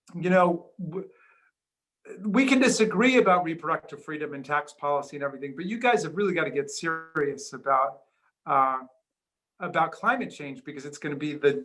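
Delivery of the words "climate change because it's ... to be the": ordinary talk, nothing marked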